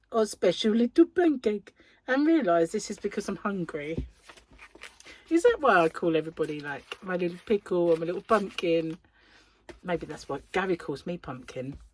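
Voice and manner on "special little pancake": put-on cooing baby talk, higher and louder. Retelling words said to a baby: imitating own baby talk. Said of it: "with my baby talk like".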